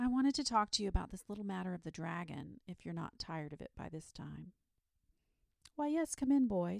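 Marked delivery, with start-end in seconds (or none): 5.7-6.8 kindly, pitched-up voice. A narrator reads the saint welcoming the boy in: kindly. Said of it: "said the saint kindly".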